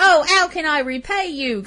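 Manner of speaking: slow, terrible put-on Cockney accent. Describing a film character thanking the doctor: Ivy's Cockney accent. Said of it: "I was talking the way she was talking".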